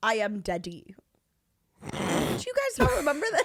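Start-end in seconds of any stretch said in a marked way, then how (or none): 0.0-0.9 put-on South African accent, much slower pace. Talking with two others about a man who calls himself daddy, Elon South African accent impression. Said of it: "you were putting on a South African accent".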